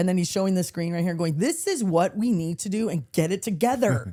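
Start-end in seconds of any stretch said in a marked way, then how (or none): 1.4-4.1 put-on bossy yelling with drawn-out words. Retelling a player yelling orders during a cooking game: imitating someone yelling orders. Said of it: "he's yelling at him".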